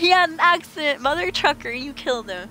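mock fed-up, mad, indignant outburst. Speaker recounts their reaction to a character's claim, retelling getting mad. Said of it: "And I got mad right after that".

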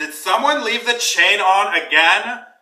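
very high, shrill, blaring talking-door voice. A game master voices a magical door scolding whoever chained it, talking door voice. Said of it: "the timbers in the door begin to morph into what looks like a giant face".

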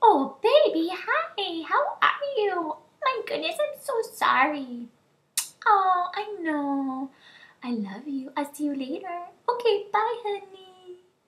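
mock very high, very slow, sugary sweet voice. Retelling a friend answering her husband's call: imitating a friend's sugary sweet tone. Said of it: "her tone totally changes".

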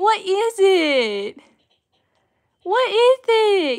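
put-on very high, slow, loud cooing baby voice.

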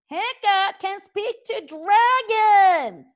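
all-out very loud, very high shout, dragons stretched. Reading a story aloud, Fishlegs is shouting very loudly. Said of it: "shouted Fishlegs very loudly indeed".

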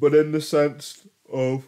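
very high, very loud words through a yawn. Talking about a game's last boss, the speaker yawns mid-sentence, yawning while speaking. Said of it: "Pardon me for yawning".

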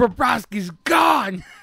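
loud, high-pitched screaming. Retelling someone's reaction to the news, imitating someone screaming. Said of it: "Screaming like me".

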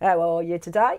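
accent from Norfolk. Comparing how English regions say the same phrase, in a Norfolk accent. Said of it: "And in Norfolk".

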